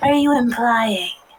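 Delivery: loud stage whisper. Voicing a character who leans closer to another: stage whisper. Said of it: "kind of stage whisper, but at least trying to whisper".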